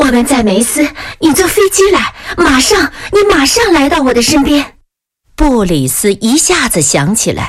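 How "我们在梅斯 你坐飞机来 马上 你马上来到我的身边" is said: anxious, high, nearly frantic, urgent pleading tone. A princess speaks to a man: anxious, almost frantic. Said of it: "公主着急的近乎于疯狂地说".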